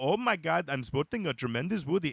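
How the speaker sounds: imitated Indian accent. Retelling his own stage bit about accents, in a put-on Indian accent. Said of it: "And I do the Indian".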